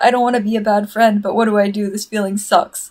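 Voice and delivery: put-on weepy, upset, tearful crying tone. Retelling a fan comic where Sarada starts crying: imitating Sarada crying. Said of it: "and then she starts, like, crying".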